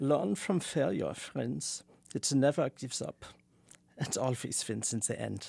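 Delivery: heavy German-sounding accent. Asked to put on your Adorno accent, deliver the lines in an Adorno accent, much more Germanic. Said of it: "It's much more Germanic".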